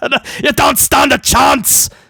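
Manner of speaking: vague, unplaceable put-on movie-style Scottish accent. Recapping Raw, the speaker repeats a wrestler's taunt: unplaceable put-on accent. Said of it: "I don't know what accent that was".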